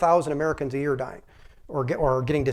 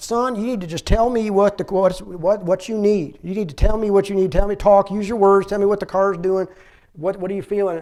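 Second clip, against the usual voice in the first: bad, exaggerated put-on Southern accent, pitched up; 5 semitones higher, 4 dB louder than usual. Speaker quotes a man questioning him as he gets out of the car: bad Southern accent. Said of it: "He sounds just like him with a bad Southern accent".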